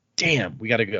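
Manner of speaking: usual speaking voice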